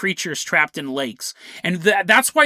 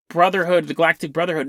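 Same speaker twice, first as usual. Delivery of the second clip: ordinary talk, nothing marked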